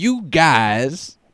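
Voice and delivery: exaggerated high, loud drawl with words stretched out. Mimicking how the other speaker sounded: Bill Cosby voice. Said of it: "You're like Bill Cosby".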